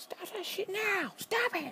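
very high-pitched, loud outburst yell. Trying to stay quiet with grandparents asleep, the speaker acts out a mock yell. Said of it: "that was a little bit too loud right there".

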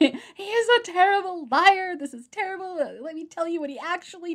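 mock shouting. Retelling pausing a film and shouting at a friend: imitating own past shouting. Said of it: "just started shouting".

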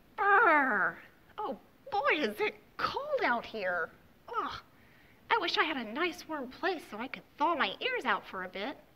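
very loud, high, slow, with a stretched "Brr". Reading a story aloud as a new animal arrives at the mitten: Rabbit character voice.

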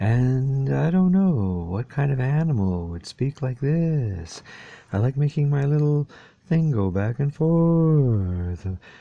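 soothing, gentle, slightly high voice, "forth" drawn out. Trying out different voices, the speaker now switches to a calm and gentle voice. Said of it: "now I'm being calming and gentle".

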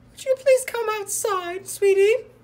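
sweet put-on mum voice, very high and very loud. Tricking someone into coming outside: pretending to be his mum. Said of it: "it's your mummy".

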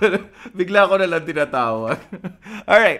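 high, loud laughing tease, giggling.

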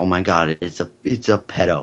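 ordinary delivery

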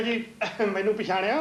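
normal talking voice

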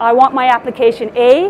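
ordinary delivery

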